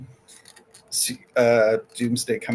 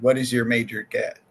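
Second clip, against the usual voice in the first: plain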